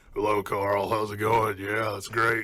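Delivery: smoke-worn, rasping smoker voice. Speaker says they're losing their voice and demonstrates it: smoker voice. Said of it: "I'm getting the smoker voice".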